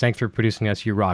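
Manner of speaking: ordinary talk, nothing marked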